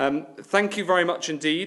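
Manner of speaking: high, loud, showy TV presenter voice. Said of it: "You're not auditioning for The One Show".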